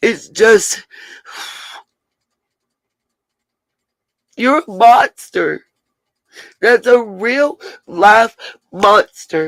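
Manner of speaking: slow, tearful talking while crying. Speaking out against whoever hurt a twenty-month-old baby, crying while talking. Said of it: "I don't mean to cry".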